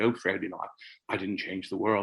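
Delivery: put-on lightly spoken English accent. Quoting a modest man's reply to you, Fred, in an English accent. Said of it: "in the English accent".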